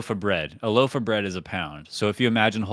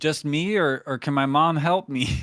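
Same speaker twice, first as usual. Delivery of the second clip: childlike put-on voice, playing a kid; 6 semitones higher than usual. In an improvised cheese-eating game with another speaker, the speaker plays the kid: kid character voice. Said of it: "I'll be the kid".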